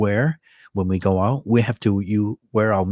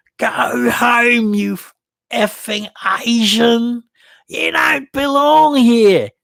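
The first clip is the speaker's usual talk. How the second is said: high, put-on shout in Australian accent; 14 semitones higher, 6 dB louder than usual. Retelling a businessman shouting across the street, imitated shout, australian accent. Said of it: "How does my Australians Australian accent sound?".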